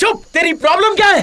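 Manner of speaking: yelling angrily. Snapping at another speaker who asked for a cigarette: yelling angrily. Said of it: "चिल्ला क्यों रहा है?".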